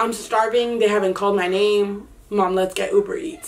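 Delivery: ordinary talk, nothing marked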